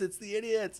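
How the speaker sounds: high crowd-style cheering.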